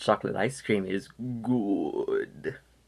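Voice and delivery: hammy, slow, overacted evil voice relishing it. Imagining the character answering an ice cream seller: imitating Palpatine's voice. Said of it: "he responds by saying this".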